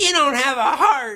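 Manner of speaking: mad, put-on anger laid on thick. Retelling a movie, voicing the girl after she gets mad: acting mad. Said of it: "she gets mad".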